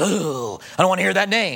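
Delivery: demonic monster voice. Speaking about demons believing, the speaker acts one out: demon voice. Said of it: "the demon goes".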